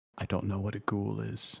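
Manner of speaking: secretive, conspiratorial, just-between-us confiding tone. Terry leans in at the bar to answer, conspiratorial. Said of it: "leans in conspiratorially and he says".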